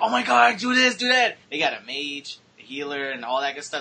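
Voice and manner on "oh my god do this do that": very loud, very high, shrill hollering without panic. Describing gamers playing on hardest difficulty, acting them out: retelling players screaming. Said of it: "they're screaming at each other".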